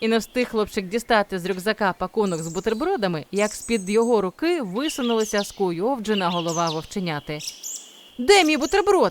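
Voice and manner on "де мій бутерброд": high, loud, worked-up, agitated, anxious voice. The wolf cub pops out from under the boy's hand and asks, agitated. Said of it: "схвильовано запитав він".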